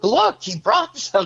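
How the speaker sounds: very high, mock, almost sarcastic tone. Retelling how everyone reacted when the speaker brought wine: retelling a sarcastic remark. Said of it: "almost sarcastically".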